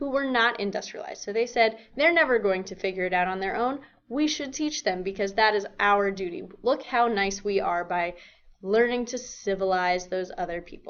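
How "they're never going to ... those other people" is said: normal talking voice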